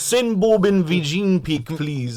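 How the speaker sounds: clumsy, bad put-on Indian accent. Joking about a guest's name on a podcast panel: bad put-on Indian accent. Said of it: "I can't do an Indian accent".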